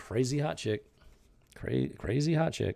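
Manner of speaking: mocking, tongue-in-cheek delivery. Speaker reacting to a surprising turn of events, sarcastic. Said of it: "I'm being sarcastic when I say crazy hot chick".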